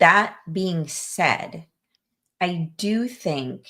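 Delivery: very slow, drawn-out, careful, deliberate speech. Speaking to Abby on the show before raising a topic: talking very slowly. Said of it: "I'm talking so slowly".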